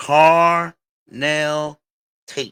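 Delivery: slow, loud, deliberate, each word drawn out and weighted. Telling a team to draft a player, with a slow, deliberate carnell tate. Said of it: "I'm saying it slowly".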